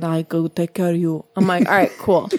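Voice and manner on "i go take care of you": slow, terrible put-on Italian accent. Recalling a man met through friends, imitating him in a bad Italian accent impression.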